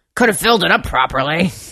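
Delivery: put-on cranky, grouchy old man voice, griping. Retelling an old customer's remark after getting his coffee, imitating a grouchy old man. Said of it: "he was grouchy as fuck".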